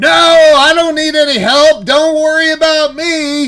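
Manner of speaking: shrill, very loud screaming. Telling a story, acting out what a man was screaming: retelling a scream. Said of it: "And he's screaming".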